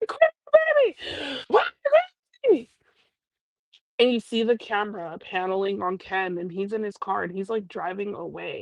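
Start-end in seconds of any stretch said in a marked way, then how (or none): 0.0-2.7 put-on very high, wailing, swooping shriek. Retelling a woman who went live: imitating someone screaming. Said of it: "exactly her tone and how she was screaming".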